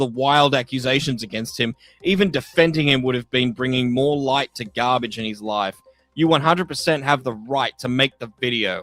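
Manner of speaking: ordinary talk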